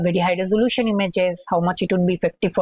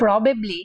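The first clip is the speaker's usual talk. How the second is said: emphasized 'probably'; 3 semitones higher than usual. Lecturing on image patches, contrasting patches from different images: stress on 'probably'. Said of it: "I emphasize the word probably".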